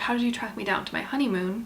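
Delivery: ordinary delivery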